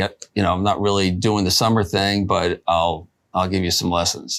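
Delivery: ordinary talk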